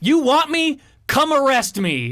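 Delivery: put-on yell, pitched very high. Imagining defying a cop who orders a return, retelling yelling back at a cop. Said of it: "And I yell back".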